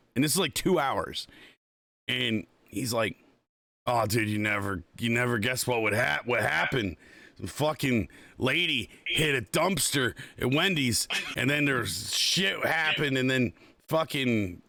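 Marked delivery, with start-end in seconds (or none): none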